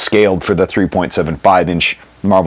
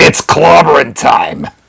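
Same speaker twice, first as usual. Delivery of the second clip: loud, raspy voice like a chain-smoking grandmother; 9 semitones higher, 5 dB louder than usual. Signing off the video with a catchphrase: Ben voice like an old smoking grandma.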